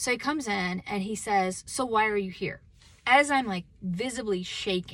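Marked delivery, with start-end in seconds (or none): 1.7-2.6 mimicked, put-on mean tone. Retelling what he asked her while she was visibly shaking, mimicking a mean question. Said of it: "He was so mean".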